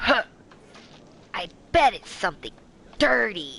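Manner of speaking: derisive, scoffing delivery with a huff. Retelling what an annoyed woman said while looking at the speaker: imitating a scoff. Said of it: "she scoffs".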